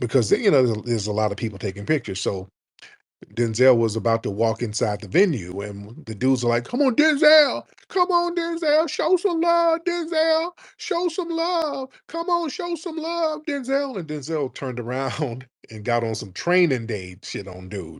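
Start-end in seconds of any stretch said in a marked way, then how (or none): 6.6-14.0 very high, drawn-out, crowd-like hollering. Retelling how the men outside the venue shouted at a man walking in, imitating fans yelling. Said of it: "you ain't got to do all that yelling".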